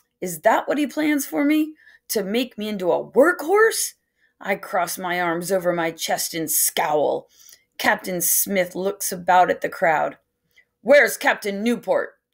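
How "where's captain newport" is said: restless, impatient delivery. A narrator reads Captain Smith asking a question before the crowd, impatient. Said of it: "He asked impatiently".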